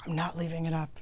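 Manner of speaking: put-on angry voice. Retelling an argument with security guards over a garage: retelling own angry words. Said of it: "I started to get so mad".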